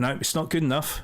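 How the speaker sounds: disappointed voice. Retelling a driver's reply after a second-place podium: imitating a disappointed driver. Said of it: "he was, like, so disappointed".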